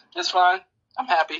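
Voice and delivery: put-on voice crack, cracking on purpose. Responding to teasing about being beaten by her, voice cracking. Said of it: "You hear the crack in his voice?".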